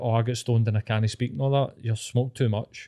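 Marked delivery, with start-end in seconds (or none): none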